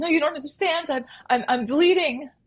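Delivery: put-on tearful, high, hysterical sobbing voice. Retelling what a pulled-over driver said: imitating hysterical crying. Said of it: "hysterical crying".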